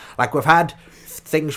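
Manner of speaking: usual speaking voice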